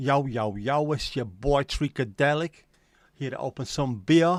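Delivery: loud put-on American accent. Joking about being paid to open things, the speaker gives an intro in a put-on American accent. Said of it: "Do I need to put on an American accent first".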